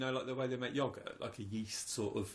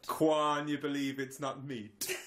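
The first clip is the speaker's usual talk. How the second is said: put-on Jamaican-accented delivery; 2 semitones higher, 4 dB louder than usual. Talking with another person, delivering a line in a Jamaican accent. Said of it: "Why are you using Jamaican accent for?".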